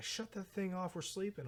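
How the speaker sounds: high-pitched yell. Retelling how bandmates answer starting the van early: imitating bandmates yelling. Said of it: "yelling at me".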